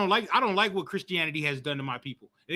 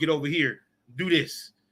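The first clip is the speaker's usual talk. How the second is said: put-on firm, stern, serious, no-nonsense tone; 3 semitones lower than usual. Showing the voice kids never heard telling them what to do: stern voice. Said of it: "with a stern voice".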